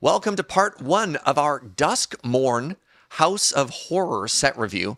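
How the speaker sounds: slow, deliberate, careful delivery, each word placed. Welcoming listeners to part one of the set review, saying it slowly. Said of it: "I had to say that slowly".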